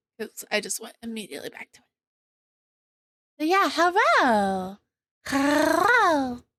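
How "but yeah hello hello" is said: very slow, drawn-out, high, sing-song, excited. A streamer greets viewers at the start of the stream; excited voice. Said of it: "it's still gonna be this voice apparently".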